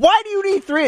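mock yelling. Retelling how a woman yelled at the speaker over the tickets, retelling a yell. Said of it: "She's yelling at me".

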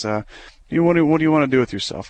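put-on condescending tone. Recalling a woman who talked down to him, the speaker mimics her, mock-condescending. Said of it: "She's condescending, talking down to me".

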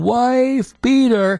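very high acted heckling scream, "wife" drawn out. Retelling a spectator's repeated taunt at a sporting event: imitating someone screaming. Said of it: "He's just screaming".

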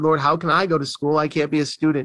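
ordinary delivery

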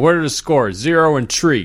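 put-on Chicago accent, old-timer style. Telling a story about old guys at Wrong's Tap, in a Chicago accent. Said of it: "all the old guys were doing the Chicago accent".

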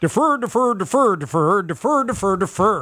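bork-bork puppet-style comic Swedish-sounding gibberish voice. Retelling how someone said it a few weeks back, like the Swedish Chef. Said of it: "sounding like the Swedish Chef".

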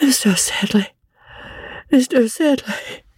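weak, feeble, faint, drawn-out high cry. Narrator reads the poor boy brought back from battle calling for Mr. Sedley, crying out faintly. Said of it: "cried the boy faintly".

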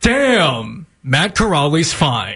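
broadcast news anchor delivery. Asked by a co-host to read a line in his news anchor voice. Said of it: "can you read it in your news voice".

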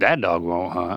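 dry, low, uncaring sarcastic tone. Trying the same line in different emotions as asked; sarcastic. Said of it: "Sarcastic to me is more like".

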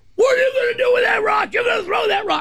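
shrill, very high, fast, rushed screaming. A storyteller retelling how a woman screamed at someone, retelling a woman's screaming. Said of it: "the woman is screaming at Tyler".

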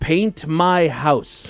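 measured, slow, deliberate, word-by-word delivery. In a joke, the guy puts money on the bar and says it slowly. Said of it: "he says slowly".

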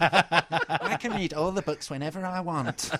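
put-on kid's voice, millennial child. Asked if that was a child, doing an impression of a millennial child. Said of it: "my impression of a millennial child".

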